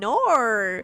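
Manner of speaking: long, drawn-out Australian vowel stretching the word "nor". Showing how complicated the accent is to say: drawn-out australian vowel on nor. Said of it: "It's so complicated to say it that way".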